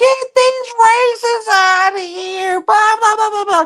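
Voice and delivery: very high, squealing mock scream. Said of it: "will cry and, and yell and scream".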